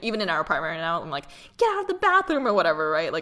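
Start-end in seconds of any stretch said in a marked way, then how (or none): 1.6-2.5 very high, loud, carrying yell. Retelling calling a partner out of the bathroom: retelling own yell. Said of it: "he's like, "Don't yell."".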